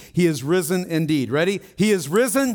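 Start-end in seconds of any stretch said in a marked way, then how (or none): 1.8-2.6 high, shouted call-out. Leading an Easter call-and-response in church, shouting. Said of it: "but I'm going to shout".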